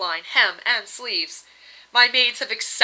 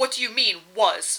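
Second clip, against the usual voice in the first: sharp, snappish, cutting tone. Reading fiction, a wife cuts into her husband's account, speaking sharply. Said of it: "Varda said sharply".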